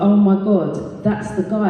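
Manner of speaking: normal talking voice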